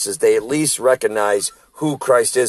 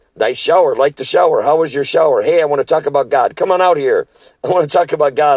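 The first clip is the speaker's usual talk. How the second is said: mock breakneck yelling, words tumbling out rapidly; 5 semitones higher, 4 dB louder than usual. Retelling a man on a bike calling out beside the van's shower, yelling. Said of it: "he's yelling".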